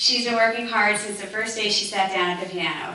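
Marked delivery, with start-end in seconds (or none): none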